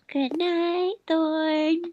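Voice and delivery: lulling, soothing voice, as if for sleep. Telling a tired friend good night, voice to put someone to sleep. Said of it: "let me put you to sleep".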